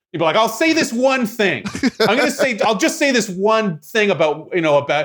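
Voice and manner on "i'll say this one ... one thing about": very high, insistent, pushed aside. Imagining a comedian going in and out, getting aggressive: Chris Rock voice. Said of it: "in Chris Rock's voice".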